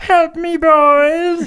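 put-on shrill, loud, high old French lady voice, boys stretched. Telling a story, the speaker voices Robert the Owl calling his owls for help: old French woman voice. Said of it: "He talks like a French woman, like a really old".

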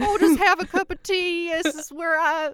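booming, slow, high put-on voice. Playing Satan settling into a haunted house: Satan sounding like Doctor Phil. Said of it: "why does he sound like Doctor Phil?".

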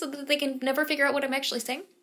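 talking really fast, rapid-fire delivery. Podcast co-host talks about listeners speeding up playback, talking really fast. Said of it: "I'll talk really fast like this".

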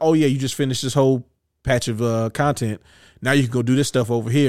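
normal talking voice

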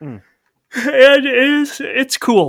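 talking through a yawn. Describing playing Half-Life Alyx after a long week, yawning. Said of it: "I was yawning".

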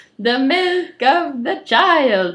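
loud, high, fake Italian accent with added "uh". Repeating a quote by an Italian archaeologist: put-on Italian accent. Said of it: "We both added the "uh" at the end".

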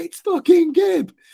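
very high-pitched, frantic, giddy outburst of excitement. Retelling their own reaction on recognizing a man they met, going wild with excitement. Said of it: "and I went nuts".

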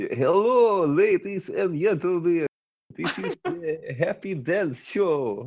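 put-on Latvian-accented speech. Describing the shows in Latvia, imitating an atrocious Latvian accent. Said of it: "they have such an atrocious accent in Latvia".

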